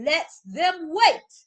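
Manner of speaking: booming, very loud voice. Retelling the king's line to people kept waiting: imitating the king raising his voice. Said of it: "the king raised his voice".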